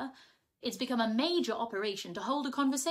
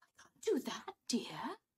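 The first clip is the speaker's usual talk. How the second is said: shocked, scandalised, taken-aback tone; 5 dB quieter than usual. Mother answers Larry's demand that she sell the house; shocked. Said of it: "said Mother, shocked".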